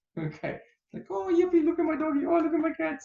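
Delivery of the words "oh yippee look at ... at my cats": very high, loud cooing pet-talk voice. Showing how people talk to their dogs and cats, in the voice people use with pets. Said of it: "in an amazing voice with their dogs and their cats".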